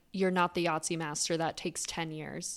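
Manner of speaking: mock deadly serious, super serious tone. Retelling a video, the speaker quotes the grandma's reply: mimicking someone super serious. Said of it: "she's like super serious".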